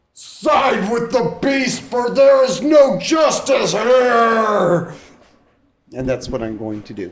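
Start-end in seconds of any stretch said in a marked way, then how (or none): 0.2-5.0 loud, very high, rousing, bolstering rallying shout. A player voices their character's declaration during a tabletop game, in a loud, bolstering voice. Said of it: "in a loud, bolstering voice".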